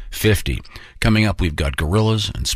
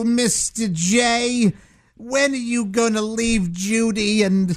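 put-on robot maid voice, pitched higher. Doing a requested impression from The Jetsons: Rosie the robot maid voice. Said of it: "the on-spot impression that [name] does of the show The Jetsons".

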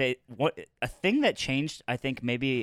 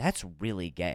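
mock sincere concern in a low, hushed tone; 6 semitones lower, 6 dB quieter than usual. Retelling what a guy said on walking into the bathroom: imitating a concerned tone. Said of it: "and he said this like concerned".

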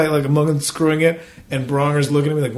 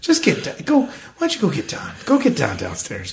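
put-on, forced calm tone, straining to stay calm. Retelling telling someone to fetch the building manager during a leak: retelling forced calm. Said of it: "I'm trying to be so calm".

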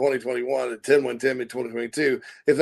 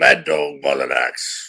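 lower, put-on stately British statesman voice; 11 semitones lower than usual. Joking about a nickname, doing a Winston Churchill voice. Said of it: "He talks like Winston Churchill".

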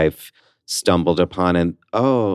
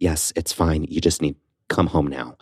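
mock-dire, dark, urgent tone; 2 semitones lower, 5 dB quieter than usual. Retelling what her mom told her, imitating mom's dark, urgent voice. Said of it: "there's darkness in her voice".

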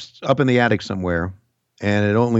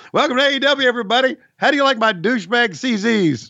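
very high wrestling-commentator voice, CZs stretched out; 14 semitones higher than usual. Joking about getting ready for the bit, doing a Tony Schiavone impersonation. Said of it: "my best Tony Schiavone on AEW impersonation".

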